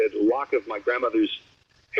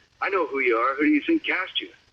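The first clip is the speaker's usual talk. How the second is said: intimidating, tough-sounding voice; 2 semitones higher than usual. Retelling what the actor said on set: Clint Eastwood voice. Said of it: "that's a good way of doing his voice".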